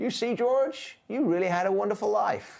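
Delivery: angel voice, pitched very high. Quoting the angel from a favourite film: Clarence the angel impression. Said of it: "that's a brilliant impression".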